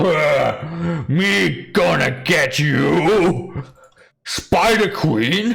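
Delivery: very slow, drawn-out, snarling orc voice. Voicing a half orc who threatens the spider queen: half orc snarling. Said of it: "the half orc just sort of snarls".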